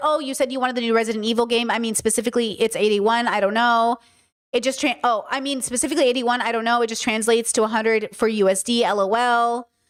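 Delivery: ordinary delivery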